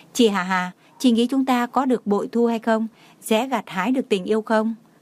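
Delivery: plain reading voice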